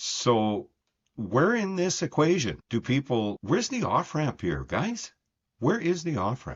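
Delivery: frustrated, exasperated tone. Video host speaking to viewers, frustrated. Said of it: "I'm sorry, I'm frustrated".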